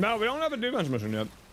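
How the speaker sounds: talking with mouth full. Replying to a question while playing a game, talking with mouth full. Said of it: "I'm eating with my mouth full".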